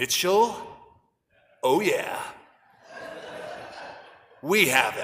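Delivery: acted, hushed, dead-serious, intense delivery. Retelling a cop answering about a lost kid, imitating a really intense voice. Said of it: "says in a really intense voice".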